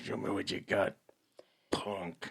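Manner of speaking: slow, unhurried, breathy whisper. Daring the co-host to show what they've got: Clint Eastwood voice. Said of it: "That's my Clint Eastwood impression".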